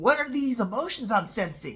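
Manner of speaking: ordinary talk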